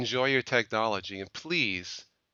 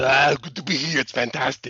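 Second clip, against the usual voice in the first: said loud and raised; 3 semitones higher, 6 dB louder than usual. Pretending to phone Governor Schwarzenegger and answering as him: Schwarzenegger impression. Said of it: "Governor Schwarzenegger's private phone number".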